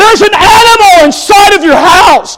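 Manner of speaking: very high-pitched, panicked scream. Speaker acts out a scene for the listener, retelling a panicked scream. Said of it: "And you see me screaming".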